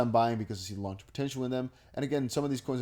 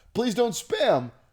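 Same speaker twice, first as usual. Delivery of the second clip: voice cracking into a very high squeak; 11 semitones higher, 7 dB louder than usual. A creator addressing viewers at the end of a video, voice cracking. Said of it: "nice voice crack right there".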